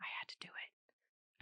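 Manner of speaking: slow, drawn-out, hushed, barely voiced whisper. Retelling a client's call back to the speaker: imitating a whisper. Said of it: "and he was whispering".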